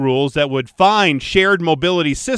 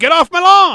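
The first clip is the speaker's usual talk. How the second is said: put-on old man voice; 12 semitones higher, 6 dB louder than usual. Joking about sounding like an old guy: Bernie Sanders voice. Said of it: "Now I sound again like Bernie Sanders".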